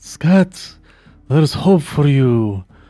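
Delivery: calm, wise mentor voice. In a game, a player speaks to a cowering character; Obi-Wan voice. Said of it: "make it sound like an Obi-Wan kind of thing".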